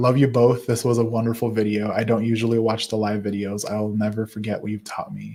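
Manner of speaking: ordinary talk, nothing marked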